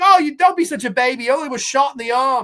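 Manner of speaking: bad British accent, drifting Australian. Retelling an argument's dialogue, quoting her line, in a bad british accent. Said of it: "I don't do a good British accent".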